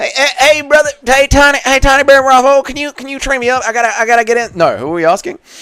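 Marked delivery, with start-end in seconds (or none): 0.0-4.6 very high-pitched, small tiny-guy voice. Answering a chat request to do a Tiny Bryce Mitchell impression. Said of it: "Can you do an impression of Tiny Bryce Mitchell?".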